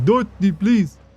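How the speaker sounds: high pet voice. Speaker addresses Chad directly, using the General Chad voice. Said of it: "That's the voice I use for you. It's General Chad voice".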